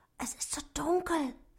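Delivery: high, hushed half-whisper under the breath. Dwarf Otto, just out from under the duck's wing, talks to Loni: half-whispered. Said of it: "flüsterte Otto".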